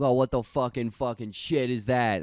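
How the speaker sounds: put-on thick Philadelphia accent. Imitating people heard talking in philly: imitating a thick philly accent. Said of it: "talking with this shitty accent".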